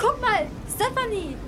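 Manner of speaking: loud, high shrieking scream, all at once. A girl looks out the window and calls to her friend, screaming. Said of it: "schrie laut los".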